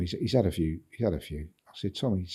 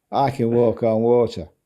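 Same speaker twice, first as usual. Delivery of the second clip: put-on slow, loud, drawn-out Manchester accent; 3 semitones higher, 9 dB louder than usual. Retelling a story, quoting a man who'd had a few drinks, in a Manchester accent. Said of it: "he goes in his Manchester accent".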